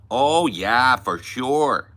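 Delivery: loud, slow, deliberate put-on Midwestern accent. Mocking the most annoying accent, in a put-on Midwestern accent. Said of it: "that fucking Midwest shit".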